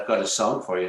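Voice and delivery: put-on polite English gentleman accent. Retelling Mutt Lange phoning the studio, in a polite English gentleman accent. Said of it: "in his nice English, polite gentleman English accent".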